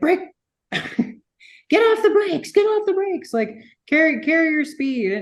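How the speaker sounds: mock screaming. Retelling his instructor during right-seat instruction at AMP: imitating instructor screaming. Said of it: "the whole time he's screaming at me".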